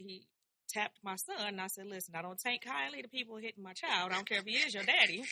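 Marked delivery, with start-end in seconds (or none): none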